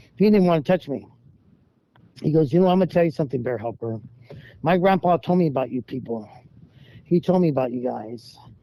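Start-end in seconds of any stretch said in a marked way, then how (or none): none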